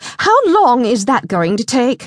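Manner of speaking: sharp, frustrated edge. [name] speaks up from behind Melanie, sharp, frustrated. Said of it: "frustration making her voice sharp".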